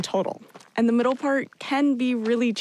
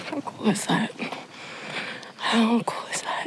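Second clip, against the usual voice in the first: soft, breathy, hushed whisper; 4 dB quieter than usual. Watching a condor on the trail, the speaker whispers so it won't go away. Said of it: "I'm whispering because I don't want it to go away".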